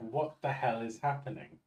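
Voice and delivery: confused, bewildered talking-pet voice. Voicing the pet's thoughts as it is handled: voicing the confused pet. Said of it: "He's just like".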